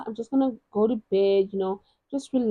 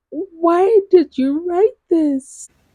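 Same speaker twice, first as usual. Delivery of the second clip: high, loud, sobbing cry, blubbering through tears; 8 semitones higher, 8 dB louder than usual. Introducing sad romance book recommendations, demonstrating mock sobbing. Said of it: "that type of crying".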